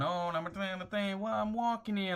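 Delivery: put-on Italian accent. Mocking people who claim Italian roots but never went to Italy: fake Italian accent. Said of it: "like all this type of Italian accent".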